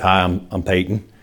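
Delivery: put-on Southern accent. Retelling how a man introduced himself, imitating Peyton's Southern accent. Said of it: "in that kind of Southern, accent".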